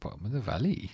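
put-on Welsh accent. Showing the other speaker how the phrase must be said, in a welsh accent. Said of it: "you've got to say that with a Welsh accent".

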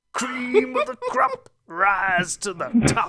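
slow, drawn-out, high, swooping swinging pitch. Joking about Randy Savage in God of War: Randy Savage impression. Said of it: "Have the Randy Savage dragons in God of War".

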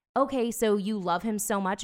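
normal talking voice

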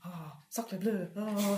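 put-on grumbling mutter in French accent. Describing what the listener hears while down there: French-accented muttering. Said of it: "you hear sort of like mutterings".

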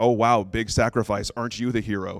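play-acted, self-mocking sarcastic tone. Retelling what was said to oneself after typing a sacrifice: retelling own sarcastic remark. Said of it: "I'm so sarcastic that I'm sarcastic with myself".

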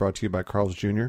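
plain

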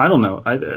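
ordinary delivery

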